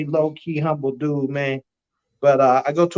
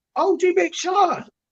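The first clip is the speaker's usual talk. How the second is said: very high put-on English accent. Retelling a stranger calling out to him in an airport, in an English accent. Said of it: "in an English accent".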